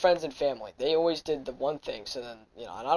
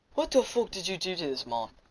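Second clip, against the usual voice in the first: put-on broadest possible Irish accent, laid on thick; 3 semitones higher, 6 dB quieter than usual. Retelling what Kevin, who never talks, suddenly blurted out: most Irish accent possible. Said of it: "In the most Irish accent possible".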